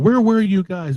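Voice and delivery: acted, high-pitched hollering. Speaker recounting a film scene, retelling someone hollering at the boyfriend. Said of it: "she's hollering at the boyfriend".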